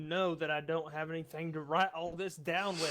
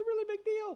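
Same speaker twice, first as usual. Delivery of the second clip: voice climbing very high in pitch. Joking along with the others, say it in a voice going higher. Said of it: "the higher my voice gets".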